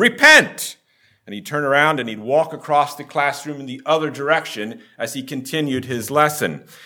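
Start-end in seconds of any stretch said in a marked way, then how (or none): 0.0-0.8 sudden, very loud, high-pitched yell. Retelling how a Bible teacher demonstrated repentance: imitating a teacher yelling loudly. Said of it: "he'd yell very loudly".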